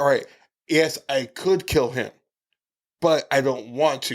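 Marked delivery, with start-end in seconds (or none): none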